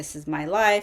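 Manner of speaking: acted, tearful speech, breaking down crying. Recalling breaking down in front of a dietitian, reenacting crying words. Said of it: "as I just started crying and saying like".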